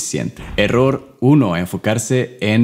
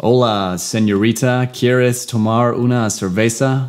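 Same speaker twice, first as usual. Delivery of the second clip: put-on American gringo accent speaking Spanish; 2 semitones higher than usual. Imagining an american inviting a woman for a beer, american english accent on spanish. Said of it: "Imagínate un gringo tratando de invitarte una cerveza y te dice".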